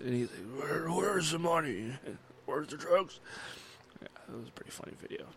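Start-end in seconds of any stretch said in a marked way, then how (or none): 0.9-3.2 voice rasped raw, hoarse and worn-out. Retelling a man in a video after trying many voices, imitating a hoarse voice. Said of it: "his voice is all hoarse".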